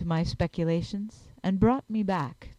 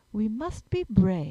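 gentle, tender, reassuring, encouraging tone; 2 semitones higher than usual. A man takes a frightened woman's hand, speaking gently. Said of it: "said Thorndyke gently".

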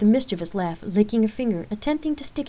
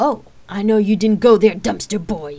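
loud, manic, cackling delivery with maniacal laugh; 7 dB louder than usual. A sister wrestling with her brother answers his taunt: with a maniacal laugh. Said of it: "Rain answered with a maniacal laugh".

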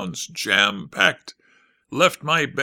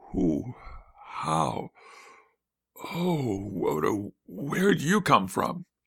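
very slow, hushed, drawn-out, horrified words; 5 dB quieter than usual. Someone behind the narrator suddenly notices him, in horror. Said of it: "a voice said in horror".

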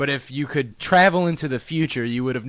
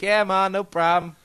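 put-on high-pitched, loud voice in a New York accent.

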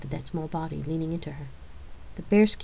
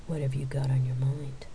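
sultry, inviting, low, seductive tones; 5 semitones lower than usual. [name] moves closer to Chris and speaks to her in seductive tones. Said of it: "Her seductive tones made Chris blush".

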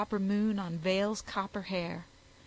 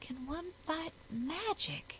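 tiny, hushed, timid voice, very soft; 8 semitones higher, 9 dB quieter than usual. A narrator reads a character's question, in a timid small voice. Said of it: "asked Vale in a timid small voice".

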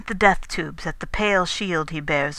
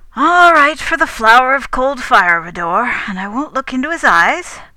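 cheerful, good-humoured, pitched up and loud; 7 semitones higher, 8 dB louder than usual. A man answers Rador and the narrator, going on cheerfully. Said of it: "he went on cheerfully".

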